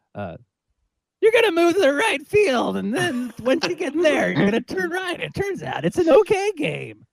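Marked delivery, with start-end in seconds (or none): 1.2-6.9 very high, booming delivery with swooping pitch. Doing a requested impression of John Madden: John Madden impression. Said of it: "Madden impression. Here we go".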